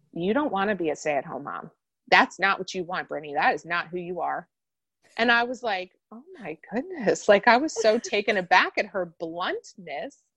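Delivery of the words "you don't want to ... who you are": mock-deadpan delivery, faster. Quoting a woman's blunt reply to her, retelling a deadpan remark. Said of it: "she just deadpan looked at me and said".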